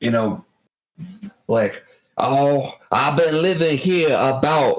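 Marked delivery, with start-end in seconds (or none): 2.2-4.8 put-on, really extreme, exaggerated heavy Louisiana accent. Describing a show's crab fisherman character and imitating him, really extreme Cajun accent. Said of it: "like really extreme Cajun accent".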